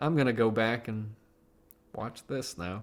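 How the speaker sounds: soft, unexcited, deflated voice. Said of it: "You don't sound particularly excited".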